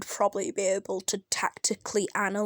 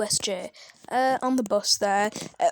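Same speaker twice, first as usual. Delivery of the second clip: plain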